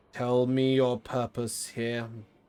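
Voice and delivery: very loud, flat, monotone robotic machine voice. Narrating a scene, the speaker voices an unfamiliar voice echoing into darkness: monotone, almost robotic. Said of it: "Speaks in a sort of monotone, almost robotic".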